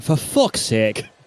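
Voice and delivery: very Irish, put-on Irish voice. Imitating the co-commentator's reaction: very Irish voice. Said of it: "in a very Irish voice".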